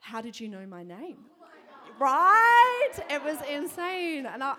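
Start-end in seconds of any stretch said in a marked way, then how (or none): 0.0-1.2 stunned, startled, freaked-out, shocked. Retelling a woman's reaction to hearing her name guessed: imitating a freaked-out woman. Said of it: "as freaked out as she was".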